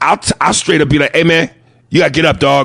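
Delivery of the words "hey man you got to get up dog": put-on mock-tough bravado. Retelling what he tells a guy who won't get up, with tough bravado. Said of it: "with that bravado in my voice".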